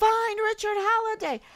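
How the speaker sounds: acted very high screaming call. Retelling screaming with a megaphone: imitating own past screaming. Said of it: "But I was just screaming".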